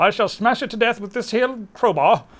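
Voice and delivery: terrible put-on British accent, loud and high. Playing a game on video, voicing the character in a terrible british accent. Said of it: "that was a terrible accent".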